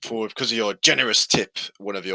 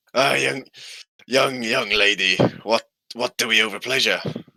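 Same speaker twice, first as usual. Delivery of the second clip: put-on drunk, drunken elderly old man voice; 2 semitones higher than usual. Voicing an old man drinking strong alcohol, greeting a young lady: drunk old man voice. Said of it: "And he goes".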